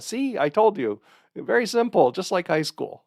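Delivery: put-on Taiwanese accent. Recalling what a lecturer said after filling chalkboards, imitating his Taiwanese accent. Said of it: "in his Taiwan accent".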